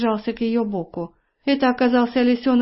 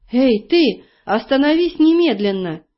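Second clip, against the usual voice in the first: frightened, alarmed, urgent call. Elli yells at the clay warrior who keeps marching on, shouted in fright. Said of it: "закричала Элли, не на шутку испугавшись".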